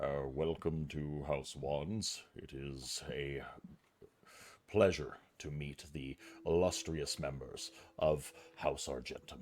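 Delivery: baritone, as deep as it goes. Storyteller voicing figures welcoming the players' house, very deep baritone. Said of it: "in a very deep baritone".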